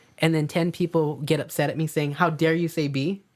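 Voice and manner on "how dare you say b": ordinary talk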